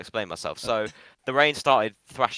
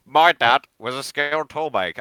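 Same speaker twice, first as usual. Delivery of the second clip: put-on nasal politician voice, louder; 4 semitones higher, 5 dB louder than usual. Asked to do Starmer's toolmaker line, the speaker does a Starmer impression, blocked nose. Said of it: "he speaks like he's got something in his nose".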